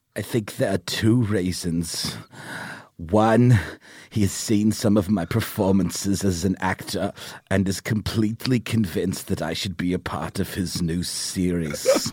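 put-on speaking with a German accent. Reading Werner Herzog's interview answer about why he said yes to Jon Favreau, in a Werner Herzog impression. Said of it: "read it to me as Werner Herzog".

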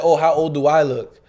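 ordinary talk

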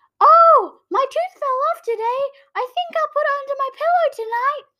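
very loud, very high announcing voice. Recalling childhood, the speaker retells announcing to their dad in a really loud voice. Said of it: "I would say in a really loud voice".

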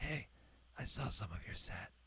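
very quiet, soft whisper, close in the ear. Retelling what a comedian said when passing offstage: imitating Jim Gaffigan whispering. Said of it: "he just whispers in my ear".

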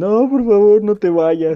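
mock crying, high and tearful. Retelling sending voice notes while crying: imitating own past crying. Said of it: "mandar notas de voz así llorando".

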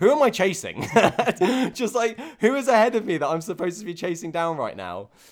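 high, loud, frantic and bewildered yelling. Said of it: "So I'm like".

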